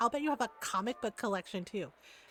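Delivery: mock, snide, sneering jeer. Retelling a woman's comment about a man's Robotech shirt; imitating a mocking remark. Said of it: "she said it mockingly".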